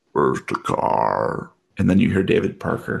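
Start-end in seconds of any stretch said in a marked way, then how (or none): 0.1-1.5 very low, rough, throaty guttural voice. Narrating a scene to a player, voicing someone getting into the car: guttural voice. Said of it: "you hear a guttural voice".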